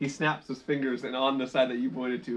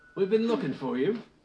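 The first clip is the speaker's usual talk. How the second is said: put-on, pitched-up British accent, laid on thick; 7 semitones higher than usual. Voicing the reply of a being that speaks in common to the group; too-British accent. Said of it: "did I go too British?".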